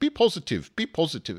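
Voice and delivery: awful put-on Dutch accent. Mocking what people at Philips in Holland would say, in an awful Dutch accent. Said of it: "in that awful Dutch accent".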